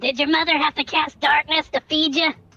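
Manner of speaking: shouting. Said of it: "I said".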